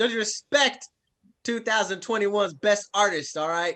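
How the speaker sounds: high, sarcastic tone. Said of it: "That's sarcasm, by the way".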